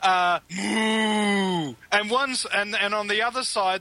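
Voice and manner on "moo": high, mock-shouted moo like a cow. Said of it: "is shouting".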